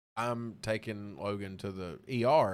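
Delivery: plain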